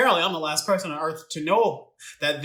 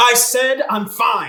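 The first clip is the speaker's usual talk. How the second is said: very loud, high-pitched shouting; 7 semitones higher, 9 dB louder than usual. Answering a worried parent's question, yelling. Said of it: "Who are you yelling at?".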